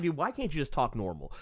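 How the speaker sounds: normal talking voice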